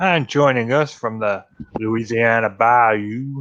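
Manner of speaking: bad, put-on bayou Louisiana accent. Show host introducing the next guest on the show, in a terrible louisiana accent impression. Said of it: "That was a terrible impression".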